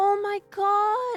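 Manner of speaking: put-on sympathetic girl voice. Retelling what a classmate said in gym class: imitating a sympathetic girl. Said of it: "sympathy in her voice".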